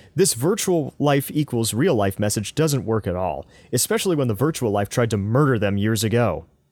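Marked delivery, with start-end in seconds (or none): none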